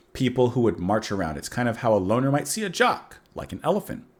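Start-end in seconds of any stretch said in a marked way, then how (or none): none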